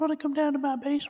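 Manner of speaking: squeaky, very high, loud cartoon voice. Asked to go on, doing the old guy from Family Guy: Herbert from Family Guy voice. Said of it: "That's alarmingly accurate".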